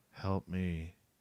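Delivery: dead level, flat, emotionless monotone. Retelling voices heard that tried to lure them in: imitating monotone voices. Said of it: "it was all monotone".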